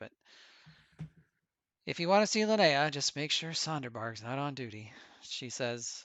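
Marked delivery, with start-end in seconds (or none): 0.0-4.9 mumbled, half under the breath. As a woman turning back to her paperwork, giving a warning: muttering. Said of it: "she kind of mutters that".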